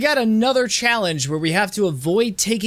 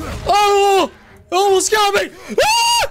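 very high, rising, drawn-out panicked shriek; 13 semitones higher, 4 dB louder than usual. Playing a game, nearly hit by a big enemy: shrieking in panic. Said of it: "Never tell Atreus that I shrieked".

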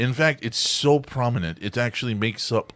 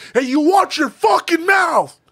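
manic, very loud, high-pitched yell; 9 dB louder than usual. Showing how everything is turned up to ten in a coked-out Nicolas Cage voice. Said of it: "Everything's turned up to ten".

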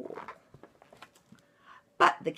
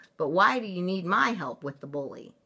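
ordinary delivery, nothing marked

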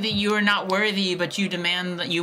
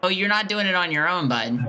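plain

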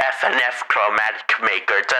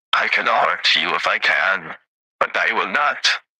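put-on grand, low, epic voice; 4 semitones lower than usual. Answering a listener question about a character, putting on an epic voice. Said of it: "let me put my epic voice on for this".

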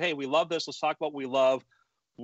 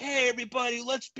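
mock fake cheerful friendliness, higher; 9 semitones higher than usual. Contrasting a fake group greeting with a sincere one: imitating a fake cheerful greeting. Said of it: "one of these fake".

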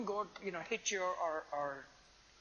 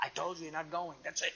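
put-on stern tone; 2 semitones lower than usual. A parent retelling how they refused their daughters, in a mock-stern voice. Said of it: "with that stern voice".

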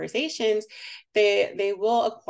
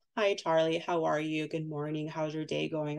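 muted, flat, much quieter adult speech; 6 dB quieter than usual. Speaker explaining infant-directed speech demonstrates the alternative, muted adult speech. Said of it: "that muted adult speech".

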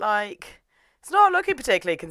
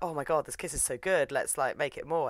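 ordinary talk

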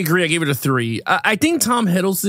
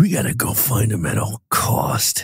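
slow, drawn-out, fake raspy movie-hero voice; 9 semitones lower than usual. Mocking how action stars talk, speaker does a raspy action-star voice. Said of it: "The raspy".

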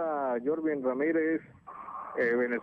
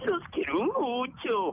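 sing-song, goofy dinosaur voice swooping up high; 11 semitones higher than usual. A caller invited to send greetings on air speaks as Barney, Barney the Dinosaur voice. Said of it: "soy Barney Dinosaurio".

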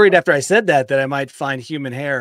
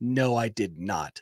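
acted-out angry, offended tone, very slow; 4 semitones lower, 8 dB quieter than usual. Retelling a Taco Bell worker's reply: imitating an angry denial. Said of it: "he said with an angry look on his face".

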